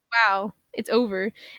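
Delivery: plain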